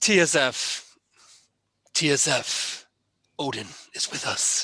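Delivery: huskiest possible voice. Asked by another speaker to say it in Eivor's voice: husky Eivor voice. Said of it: "your best, huskiest Eivor voice".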